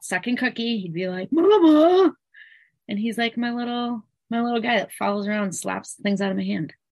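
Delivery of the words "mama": very high, stretched-out, drawn-out calling voice. Imitating a husband who sees a snack grabbed: imitating husband calling out. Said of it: "exactly how he would sound if he saw".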